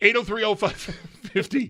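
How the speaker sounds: words breaking into laughter. Giving the phone number for callers, laughing while talking. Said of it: "let me say the phone number without laughing".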